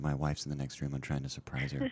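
quiet whispering. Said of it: "I'm sorry if I'm whispering".

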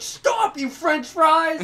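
very high, loud, slow, angry yell.

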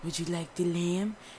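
soft, low-spoken, hushed murmur. Retelling a waiter offering lamb at a restaurant: imitating a waiter talking low. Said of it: "they talk even lower when you sit".

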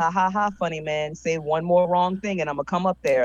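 plain

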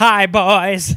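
very loud, belted-out, comedic delivery. Doing a night-on-the-town bit, greeting the boys: Paul Lynde impression. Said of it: "Those impressions sound remarkably similar".

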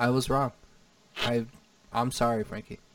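not sounding sincere. Apologizing to Frankie, who doesn't believe it, insincere apology. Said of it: "You didn't have no sincerity in your voice".

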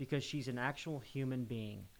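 ordinary talk

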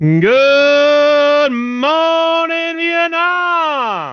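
"good" stretched out long at a very high pitch. Greeting the others after the intro is read again: Robin Williams impression. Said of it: "that was like a Robin Williams impression".

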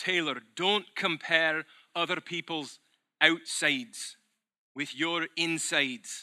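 attempted Scottish burr. Quoting advice Murdo MacLeod often gave, in a Murdo MacLeod Scottish accent. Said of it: "I always say it in a Scottish bro. My best attempt at a Scottish burr".

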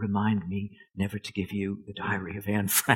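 very soft, hushed, quiet voice. Recalling his editor's only remark on a lightly edited proof: imitating editor's very soft voice. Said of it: "in his very soft voice".

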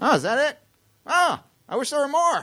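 squeaky, very high-pitched celebrity voice, pitched way up. Retelling an audition, the actor reacting afterwards: Tom Hanks impression. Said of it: "and Tom Hanks goes".

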